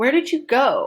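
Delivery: heavy stress on the word go. Focus-word practice with the verb as focus: stress on go. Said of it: "Go, that verb is my is my focus".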